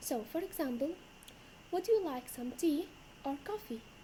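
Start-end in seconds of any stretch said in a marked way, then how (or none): 1.7-3.8 pitch rises on tea, falls on coffee. Teaching choice-question intonation, rise on tea, fall on coffee. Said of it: "our voice goes up at the first one and down at the second one".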